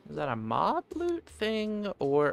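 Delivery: cracking voice. Playing a game and wondering aloud where an item came from, voice cracking. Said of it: "voice crack".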